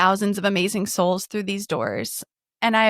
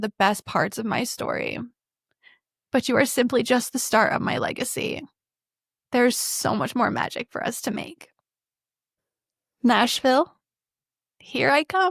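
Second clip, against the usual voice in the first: speaking through tears; 3 semitones higher than usual. Reading a hard text aloud to the camera, crying while reading. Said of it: "understood all of that through my tears".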